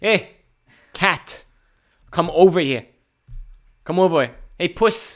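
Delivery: put-on New York accent. Showing how people in New York call a cat over, in a New York accent. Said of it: "in New York, they go".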